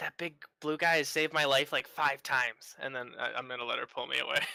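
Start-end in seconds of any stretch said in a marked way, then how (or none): 0.0-2.7 whispering in character. Whispering a line in character while being pulled away: whispering in character. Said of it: "And I'm just gonna whisper".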